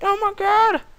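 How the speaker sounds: very high, loud, mocking yell.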